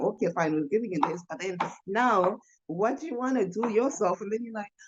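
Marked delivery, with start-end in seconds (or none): none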